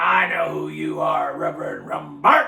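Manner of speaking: gruff, rough, creaky manly voice from a woman. Reverend retelling what a woman under prayer said to him, in a manly voice. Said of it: "she spoke up in a manly voice".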